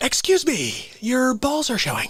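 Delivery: goofy, silly voice, swooping pitch, playing dumb. Doing an impression of Jim Carrey's goofy bit: Jim Carrey impression. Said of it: "he does his stupid thing".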